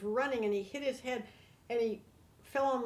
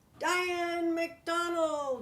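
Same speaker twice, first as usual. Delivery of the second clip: mock all-out scream, high, at full lungs; 6 semitones higher, 3 dB louder than usual. Retelling a big man on a stormy ship's bridge: imitating a scream at the top of his lungs. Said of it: "he screams out at the top of his lungs".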